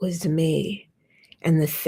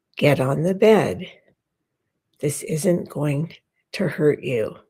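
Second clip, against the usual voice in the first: put-on deep, low voice. Retelling what a neighbor said to a five-year-old, imitating a deep voice. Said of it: "says in a deep voice".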